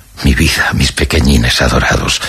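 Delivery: plain reading voice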